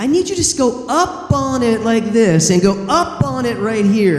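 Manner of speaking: mock, high-pitched, patronizing, condescending talking down. Retelling how she dictated a line reading in the booth: imitating a condescending tone. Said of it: "doing it in this kind of condescending way".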